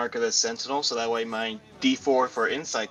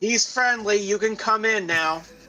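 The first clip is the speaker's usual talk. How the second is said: high-pitched shout projected to someone far away; 10 semitones higher than usual. The speaker calls out to another person: yelling out. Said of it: "I'm gonna yell out to Blaney".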